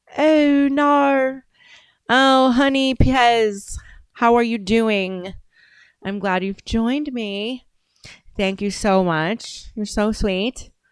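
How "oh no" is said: loud New Zealand accent, no pronounced like nah. Showing a favorite word to say in an accent: New Zealand accent. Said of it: "my favorite word to say in an accent is the New Zealand word for no".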